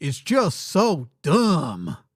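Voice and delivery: put-on country accent, very slow, drawn out, swooping. Describing people who find it impressive, the speaker says it in a country accent. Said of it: "in my best country accent".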